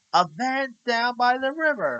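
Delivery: bad comic voice, very high and drawn out. Quoting a famous comedy sketch line: Chris Farley impression. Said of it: "I'm gonna try to do this in this, um, in his impression".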